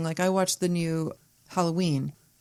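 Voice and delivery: ordinary talk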